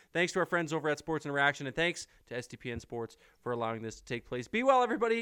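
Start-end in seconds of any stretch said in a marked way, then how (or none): 4.4-5.2 cracking, breaking voice, pitched up. Host signs off a sports broadcast to listeners, voice cracking. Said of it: "a little bit of a voice crack".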